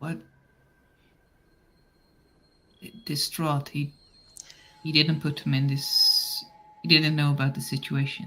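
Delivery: whispered voice. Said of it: "I whisper back to Taylor".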